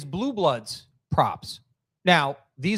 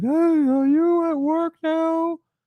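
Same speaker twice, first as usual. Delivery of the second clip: very high, very slow squeaky voice; 12 semitones higher than usual. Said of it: "this is when he was still high pitch".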